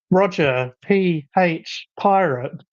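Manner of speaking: very slow robotic voice. Imitating the streaming program reading chat names aloud: imitating a robot voice. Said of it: "that very robot voice".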